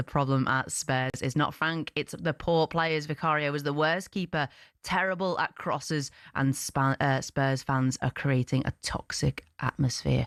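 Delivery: ordinary talk, nothing marked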